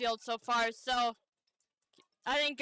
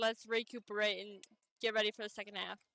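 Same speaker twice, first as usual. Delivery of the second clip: normal talking voice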